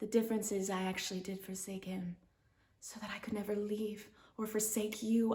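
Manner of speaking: hushed, close whispered voice.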